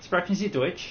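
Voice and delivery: high-pitched, show-off German phrase.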